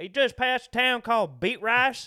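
put-on Texas accent, very loud and high. Retelling a relative's lost phone call after being asked: Texas accent. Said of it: "Can you say that in a Texas accent".

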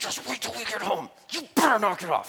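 fierce half-whisper. Acting out how parents scold their kids at a park, imitating a parent's aggressive half-whisper. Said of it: "the really aggressive whisper that parents do to their kids".

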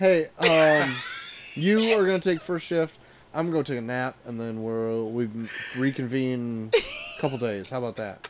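flat, unanimated voice with zero energy. Retelling the same movie scene a second time: imitating an unanimated character. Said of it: "not even that animated about it".

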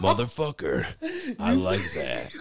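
slow, drawn-out, sing-song vampire voice swooping up and down. Retelling a movie fight scene, imitating Dracula from Blade 3. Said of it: "You sounded just like that dude".

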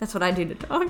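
ordinary talk, nothing marked

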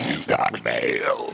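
deep, slow announcer voice, dropped low and drawn out.

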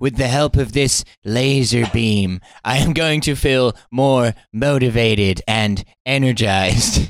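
sinister guru voice. Doing a bit, playing an Instagram inspiration guy; Dr. Evil voice. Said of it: "This is like Dr. Evil as an Instagram inspiration guy".

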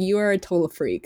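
plain

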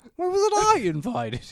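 shrill high voice, cracking on "invited". Repeating the Riggs line to show how it sounds: imitating Riggs, voice cracks at end. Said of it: "cracks at the end".

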